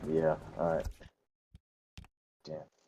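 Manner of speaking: let-down, disappointed, breathy half-whisper. Finishing a game after saying thanks for watching: disappointed voice. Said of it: "You can hear the disappointment in my voice".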